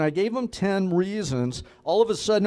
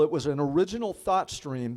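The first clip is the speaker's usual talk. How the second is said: ordinary talk, nothing marked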